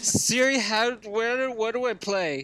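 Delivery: put-on slurred words. Demonstrating how to give the voice command, slurred words. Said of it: "Simply slur the words".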